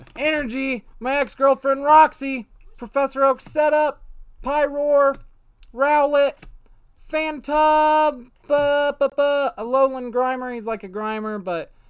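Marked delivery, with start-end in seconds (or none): 0.2-10.5 eager, thrilled, loud, high-pitched voice. Naming the cards as they come up while a friend comments, excited, getting louder. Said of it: "Your voice is getting louder".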